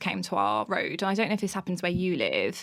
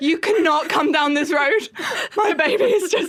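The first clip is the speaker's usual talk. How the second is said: very loud, very high-pitched tearful crying voice; 9 semitones higher, 9 dB louder than usual. Retelling how she confronted a man dressed as Santa, imitating her own crying. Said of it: "and I was like crying".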